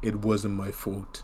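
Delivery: dead level, flat monotone with no feeling. Mocking a film character who shows no rage after his daughter's killing, flat monotone voice. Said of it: "with a monotone voice being like".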